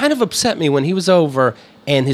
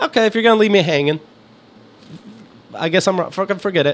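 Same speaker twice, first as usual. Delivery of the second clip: ordinary delivery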